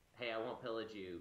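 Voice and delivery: ordinary talk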